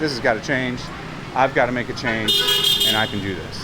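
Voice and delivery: ordinary talk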